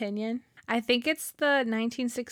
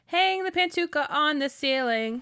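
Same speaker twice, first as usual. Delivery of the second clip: plain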